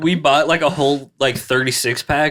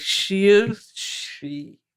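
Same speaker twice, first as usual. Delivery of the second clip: put-on sloppy, slurred drunken voice, slightly high; 6 semitones higher, 3 dB quieter than usual. Retelling how someone talked later in class: imitating slurred speech. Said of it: "he was slurring his words".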